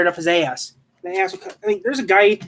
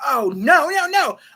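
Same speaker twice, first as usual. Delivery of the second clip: put-on very slow, long-stretched, high, frantic screaming; 7 semitones higher than usual. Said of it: "she started scre-".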